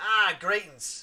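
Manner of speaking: put-on Australian accent. Voicing this guy's line in a game playthrough; australian accent. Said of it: "I'm gonna keep the Australian accent for this guy".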